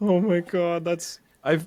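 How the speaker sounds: very high voice, words breaking into laughter. Reacting to another speaker's betting story, laughing while talking. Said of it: "I'm sorry I'm laughing".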